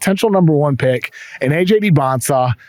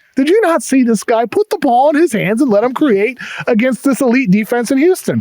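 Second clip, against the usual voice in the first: play-acted, very high, shrill screaming; 10 semitones higher than usual. Recalling watching a basketball game, retelling screaming at the tv. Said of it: "I'm like screaming at my TV like".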